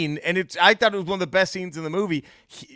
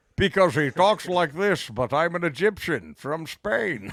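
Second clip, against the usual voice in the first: put-on Scottish accent. Mocking an actor's accent in a film role: Sean Connery impression. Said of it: "than Sean Connery".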